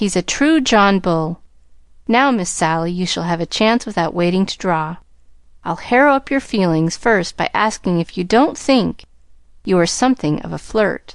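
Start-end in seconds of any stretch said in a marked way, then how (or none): none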